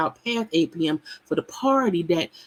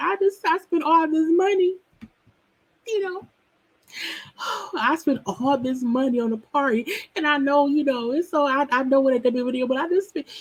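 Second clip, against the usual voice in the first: mock tearful, high, crying voice; 7 semitones higher than usual. Retelling a reality show scene, imitating someone crying in the car. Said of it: "Sheree up in the car crying".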